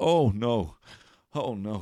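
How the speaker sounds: very slow, drawn-out, utterly resigned, doomed tone. Retelling how a cornered man curled into a ball: imitating a resigned "oh no". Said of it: "like he knew this day was coming".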